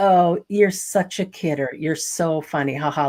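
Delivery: snide, mocking sarcasm. Retelling how a man answered a woman in an ice cream shop, mimicking snide sarcasm. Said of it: "he was being really snide and sarcastic".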